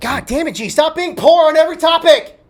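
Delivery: very high, peaking yelled outburst. Asked for his favorite Pop Tart in the final round, the speaker shouts at himself. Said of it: "look at that peak".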